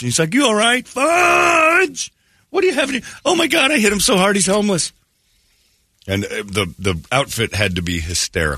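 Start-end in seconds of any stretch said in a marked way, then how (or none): 0.9-2.1 drawn-out, very high, full-lung acted scream. Retelling screaming over and over after hitting a kid in the road, retelling a scream. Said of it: "at the top of my lungs over and over".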